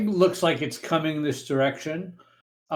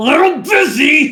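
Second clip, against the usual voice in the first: very loud, very high-pitched grunt; 12 semitones higher, 11 dB louder than usual. Voicing the master answering the spell while busy: grunting reply. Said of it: "You hear him grunt and say".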